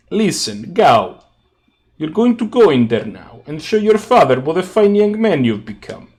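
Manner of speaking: gangster voice. Voicing Marco in a game scene: mobster voice. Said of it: "hears Marco sounding like a mobster".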